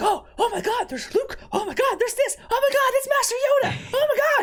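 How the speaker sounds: very high, overexcited gushing, acted out. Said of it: "dialed up to t-, twenty and is excited about everything".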